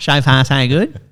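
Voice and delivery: broad, strong Australian accent with exaggerated pronunciation. Speaker from regional Victoria demonstrates the word, giving it a broad Aussie accent. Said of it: "give it a real Aussie chauffeur".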